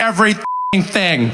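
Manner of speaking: everything said as two emphatic words, every thing. Repeating how an audience member just answered, imitating Benjamin. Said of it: "The way he said that was amazing. He's like".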